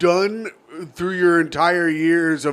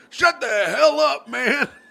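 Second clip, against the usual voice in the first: slow, drawn-out, rough, pitched-up delivery; 7 semitones higher than usual. Acting out a phone call as Joe Biden: Joe Biden impression. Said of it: "why did you write that impression down".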